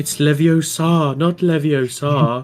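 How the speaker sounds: haunting, weird, echoing voice. A player speaks as their character using a magic scroll, haunting, weird, echoey voice. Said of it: "say in a kind of haunting, weird, echoey voice".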